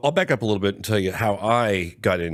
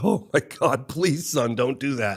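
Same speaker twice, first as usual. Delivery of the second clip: put-on begging, pleading voice, higher pitched; 6 semitones higher than usual. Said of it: "he was begging me".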